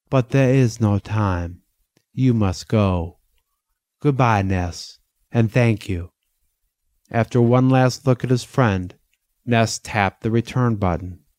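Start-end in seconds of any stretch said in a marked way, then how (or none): 0.1-6.1 soft, gentle, understanding, slower. The doctor bids Ness a final goodbye before he must go, softly with understanding. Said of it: "the doctor said softly with understanding".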